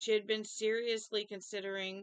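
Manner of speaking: ordinary delivery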